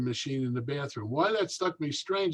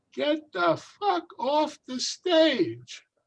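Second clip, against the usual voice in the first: put-on very high, shrill, drawn-out, top-of-the-lungs yell; 13 semitones higher, 5 dB louder than usual. Retelling a heckler at the back of a bar: imitating a woman shouting. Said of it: "she said it ten times at the top of her voice".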